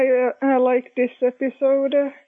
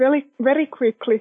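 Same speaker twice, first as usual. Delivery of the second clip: ordinary delivery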